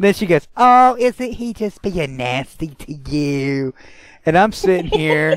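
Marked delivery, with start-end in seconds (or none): 0.6-3.7 put-on condescending baby talk. Retelling how an older woman spoke to him: imitating someone talking to a toddler. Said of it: "she's treating me like a two-year-old".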